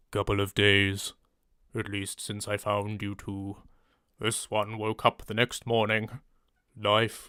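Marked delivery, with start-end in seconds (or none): 0.1-6.0 lowered deep voice, lower and quieter. Retrying a character's line after asking for it: deep voice. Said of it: "Don't know how deep I can make my voice".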